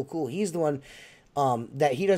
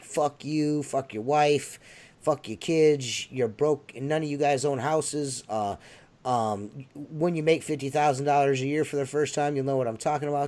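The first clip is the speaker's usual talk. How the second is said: normal talking voice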